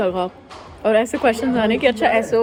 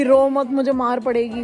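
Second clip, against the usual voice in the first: plain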